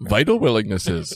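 laughing mock creature voice, inverted word order.

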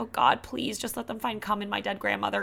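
put-on grieving, solemn, mournful, straight-faced voice. Retelling a comedian's shock joke from a special: imitating a mournful delivery. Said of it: "it looks like she's in this mournful".

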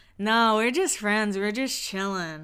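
put-on cocky voice. Retelling a scene from The Hills, imitating Spencer's cocky voice. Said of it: "his little cocky voice".

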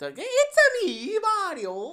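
very high pitch with every word stretched. Asked what the Mario voice actor sounds like, the speaker imitates him: high-pitched Mario voice. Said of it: "all high pitched and stuff like that".

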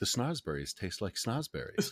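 quiet aside, muttered under the breath. A character bows and speaks only to the listener, muttered under the breath. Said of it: "under my breath and to nobody but".

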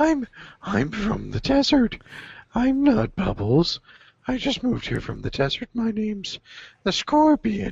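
very high character voice, swooping way up and around. Continuing the quoted scene in Bubbles' voice: Bubbles' Scorpion voice. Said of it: "Bubs goes into that voice".

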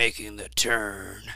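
voice-actor style announcer voice. Retelling how a hired voice actor said a video intro: imitating David Lee's intro voice. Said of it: "like that".

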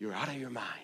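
very quiet, barely audible half-whisper. Quoting what the enemy will half-whisper during the fast: imitating a half-whisper. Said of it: "hear the whispers of".

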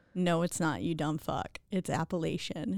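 ordinary talk

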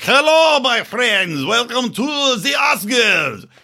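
bad accent, starting Russian, sliding into French. Mocking award shows for featuring Zelensky, doing a bad Zelensky impression. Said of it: "I don't know what accent that was".

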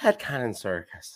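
put-on Irish accent. Imitating the listener's mother, in her Irish accent. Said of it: "in her Irish accent".

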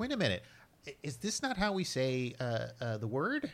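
animated, high, swooping corporate executive voice. Imitating a Sony executive confused by fans: impression of a Sony executive. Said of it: "it's my impression of a Sony executive".

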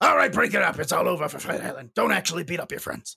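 gruff, rough, creaky talking-dog voice. Closing out the show, the speaker imitates how his dad's dog talks. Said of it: "my dad's dog talks like this".

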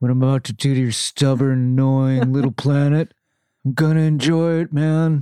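put-on mild Southern California accent. Redoing a line spoken by Thanos, in Thanos with Southern California accent. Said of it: "that little bit of Southern California, like, accent comes out".

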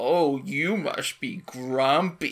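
playfully mocking, teasing delivery. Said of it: "her mocking tone".

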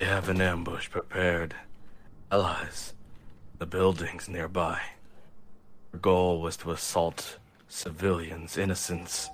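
calm, collected, focused, even warrior voice. In an actual-play game, the samurai super mutant reports to the party: calm, collected samurai super mutant. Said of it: "calm and collective samurai super mutant to this sort of, / calm and collective samurai super mutant to this sort of, / have one hand reaching for his blade, / His voice is even so much more focused".

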